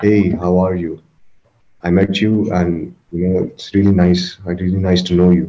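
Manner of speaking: flat, level, unvaried monotone delivery. Demonstrating how a lot of people talk, in a flat monotone. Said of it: "a lot of people talk in this monotone".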